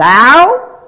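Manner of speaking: 'thou' hit hard with heavy stress. Reading aloud the question asked in the passage, emphasis on 'thou'. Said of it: "I'm putting the emphasis on the thou".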